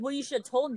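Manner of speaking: mock accusing, put-out, mildly huffy, irate tone. Retelling a phone call with a customer who cussed them out: imitating a customer yelling. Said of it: "Why are you yelling at me?".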